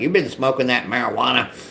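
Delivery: teasing, put-on, imitated voice. Recalling coming home sober, quoting mom in a mocking mom voice. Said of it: "I shouldn't mock my mom like that with that voice".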